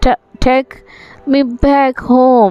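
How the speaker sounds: trembling, halting, quavering, stammering voice. Reading a story aloud, a scared character answers the genie: quavering voice. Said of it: "he said in quavering voice".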